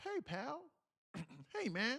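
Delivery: slow, very high-pitched voice. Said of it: "you don't sound like you say "pal."".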